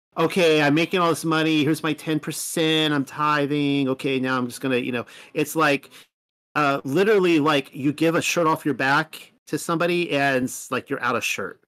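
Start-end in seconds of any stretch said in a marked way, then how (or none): none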